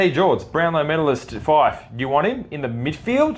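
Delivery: ordinary talk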